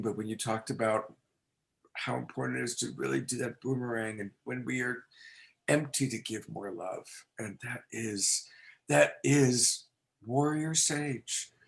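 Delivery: teary, choked-up voice breaking and cracking. Responding to a speaker whose words moved them to tears, voice cracking, teary. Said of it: "my voice is cracking".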